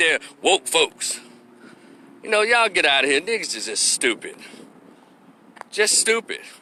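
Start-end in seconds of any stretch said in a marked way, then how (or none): 0.0-1.2 mocking sarcastic tone. Retelling how others call people woke: imitating a sarcastic remark.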